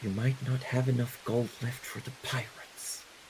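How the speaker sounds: soft, breathy whisper under the breath. A game master voices a woman quietly warning a companion, in a whisper. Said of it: "she whispers".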